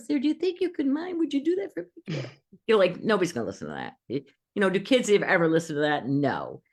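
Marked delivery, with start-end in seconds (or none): 0.2-2.3 put-on very high, tiny little-girl voice, pleading. Coaching someone on how to speak, the speaker shows the wrong way in a little girl voice. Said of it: "Don't speak from this little girl voice upstairs".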